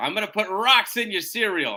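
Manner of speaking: put-on tough Brooklyn accent. Recalling his dad's childhood threat about rocks: tough brooklyn accent. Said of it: "your dad had like a really tough Brooklyn".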